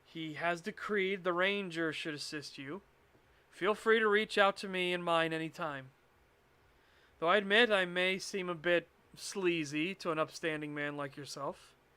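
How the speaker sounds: usual speaking voice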